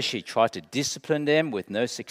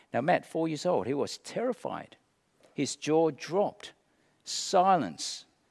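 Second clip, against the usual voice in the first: ordinary delivery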